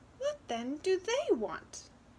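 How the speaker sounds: bright, chirpy, cheerful, high sing-song. Narrator reading the wren's question, cheerful. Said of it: "the wren asked cheerfully".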